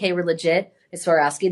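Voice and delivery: normal talking voice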